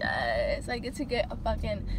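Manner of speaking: ordinary talk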